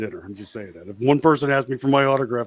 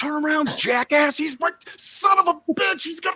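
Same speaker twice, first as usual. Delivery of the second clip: mock, very high-pitched, angry jeering; 3 dB quieter than usual. Recounting watching wrestling on TV, the speaker re-enacts yelling at the referee. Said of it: "I start yelling at the referee".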